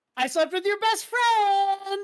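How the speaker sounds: mock, very high, loud, wildly excited blurt. Retelling a mother's shocking reveal to her son on a show: imitating an excited confession. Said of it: "she very excitedly".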